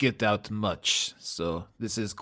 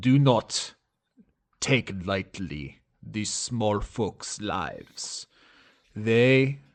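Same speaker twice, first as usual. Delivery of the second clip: lowered voice, sounding deeply wise. Voicing a character giving wisdom to the younger generation: lowered voice, imparting great wisdom. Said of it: "lowers his voice as if he's imparting great wisdom".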